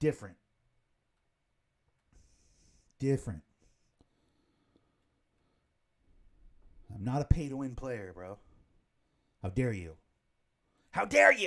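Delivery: indignant, passionate, heated, worked-up angry rant. Ranting to viewers about pay to win: getting angry, passionate rant. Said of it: "I'm getting angry".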